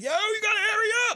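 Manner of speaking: very high, loud yelling. Recounting a man at the airport, imitating him yelling on the phone. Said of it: "he yelling, he yelling on the phone".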